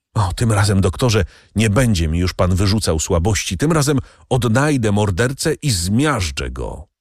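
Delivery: plain reading voice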